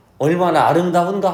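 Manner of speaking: awed, admiring, marveling, exclaiming tone. Teacher demonstrates the exclamatory reading of a line: admiring exclamatory tone. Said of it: "내가 지금 소리를 내볼게. ... 목소리 느껴지지 않아요? ... 예찬, 영탄, 감탄한 거니까".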